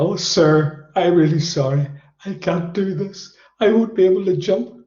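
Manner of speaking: weepy, apologetic, high, slow tearful pleading tone. Retelling a crying jumper's plea in the plane: imitating someone crying. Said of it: "he's cried that much".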